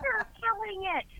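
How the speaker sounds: very high, cheery, encouraging tone. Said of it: "And she's like".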